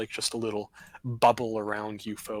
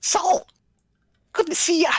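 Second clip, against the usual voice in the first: very high, loud, squeaky gnome voice; 9 dB louder than usual. Player voicing Travelard greeting Saul at the bar, in a gnome voice. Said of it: "gnome voice".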